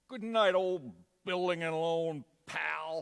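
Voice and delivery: booming, slow, drawn-out stage projection. Asked to perform the line as in the show: Uncle Billy line in character. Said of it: "say it like you would have in the show".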